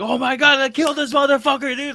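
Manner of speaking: high-pitched, shrill, loud full-out scream. Retelling own reaction while watching the show: imitating own screaming. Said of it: "screaming at the T V".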